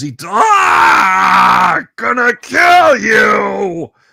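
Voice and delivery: very high, slow, rough, rising, drawn-out bellow. Narrating the game, the speaker voices a creature that has just been hit: bellowing. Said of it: "He bellows".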